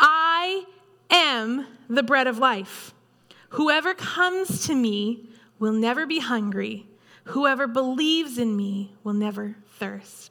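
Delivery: slow, measured, deliberate, unhurried delivery. Quoting Jesus' declaration to listeners, speaking a little slower. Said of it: "I'm going to speak it a little slower".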